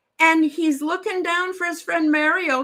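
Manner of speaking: normal talking voice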